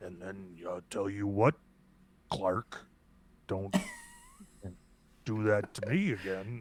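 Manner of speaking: very low, deep, dropped, regal kingly voice. Imitating a king character talking to another character, in a lowered deep voice. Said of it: "lowers his voice and makes that deep like".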